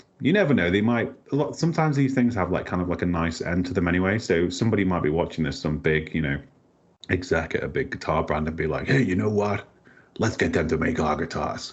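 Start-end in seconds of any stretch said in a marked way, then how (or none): 8.9-11.7 put-on American power-guy accent. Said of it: "it's my Vince McMahon accent".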